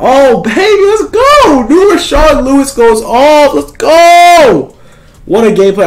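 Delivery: high, swooping, hyped-up excited screaming. Streamer reacting as a player goes off in a game, screaming with excitement. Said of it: "I'm sorry for screaming".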